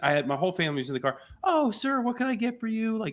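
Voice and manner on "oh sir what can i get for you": very high, extra-friendly, super-sweet voice. Retelling how a friendly attendant greeted the family: imitating a super nice attendant. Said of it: "she was super nice".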